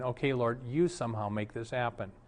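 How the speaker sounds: muttering under breath. A pastor retells praying while a woman kept changing the subject, under his breath. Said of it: "under my breath saying".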